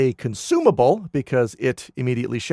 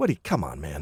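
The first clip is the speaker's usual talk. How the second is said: put-on irritated scolding, lower and quieter; 9 semitones lower, 7 dB quieter than usual. Retelling how Janakris scolds Goban after a failed attack: imitating Janakris, annoyed like over spilled coffee. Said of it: "the way he says it is just like".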